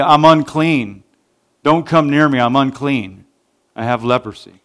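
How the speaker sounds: plain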